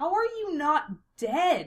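slow, offended, put-out, affronted tone. A former classmate questions them on seeing them again: affronted. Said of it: "sounding as affronted by their continued existence".

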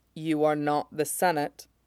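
softly spoken. A Jedi master answering an accusation of treason, quietly. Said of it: "Mace says quietly".

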